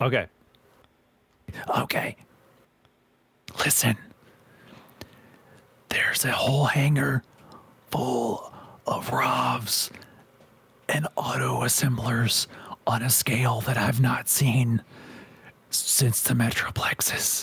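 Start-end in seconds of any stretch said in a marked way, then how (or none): 3.6-17.4 hushed, quiet tones. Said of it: "talked in hushed tones".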